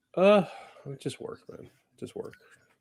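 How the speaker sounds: sounding sad. Answering a question about what has been going on: sounding sad. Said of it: "you sound so sad".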